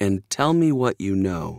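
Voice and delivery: calmly spoken. Reading a practice line where a man tells someone to sit down, calm. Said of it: "he said calmly".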